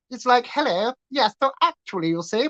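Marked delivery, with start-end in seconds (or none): 0.4-1.3 soft, posh upper-class English accent, higher pitch. Explaining how accents shape the mouth, the speaker demonstrates a proper posh voice, a bit higher. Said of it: "when you go proper and you go a little bit higher".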